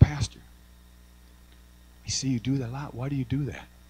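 whispered delivery. Retelling how he asked his pastor a question before the sermon, retelling a whisper. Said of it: "I whispered to him".

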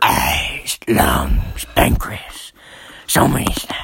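put-on synthesized-sounding voice. Imitating a movie character's line after discussing his voice: Venom voice. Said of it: "He's like".

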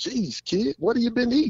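slight Irish accent, high and teasing.

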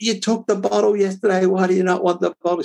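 high, frantic, exasperated pleading tone. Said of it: "I was just losing the plot".

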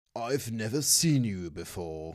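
well-spoken, refined, carefully polished voice. Voicing a half-orc host greeting the party: well-spoken Mister Pennington voice. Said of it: "very well spoken".

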